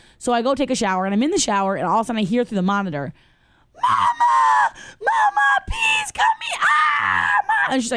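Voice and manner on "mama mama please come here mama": mock very high, drawn-out, hysterical child's scream. Retelling her child calling for mama through the monitor, imitating a child screaming hysterically. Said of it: "flipping out".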